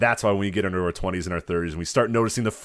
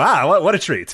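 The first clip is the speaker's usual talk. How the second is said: put-on loud, high, old-fashioned nineteen-thirties style voice; 8 semitones higher, 7 dB louder than usual. Joking about whether anyone ever enjoyed circus peanuts: old-timey 1930s voice. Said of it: "In the nineteen thirties voice".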